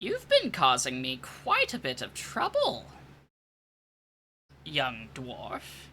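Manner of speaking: put-on old elven woman's voice, low and soft. Narrating a game, voicing an old elven woman at the player's cell: old elven woman voice. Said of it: "you see a fairly old elven woman".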